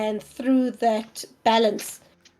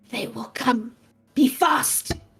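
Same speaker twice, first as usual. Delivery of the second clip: urgent, pressing monster voice. Voicing a chained beast that lifts its head and warns: urgent beast warning. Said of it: "the beast lifts its head and it's like".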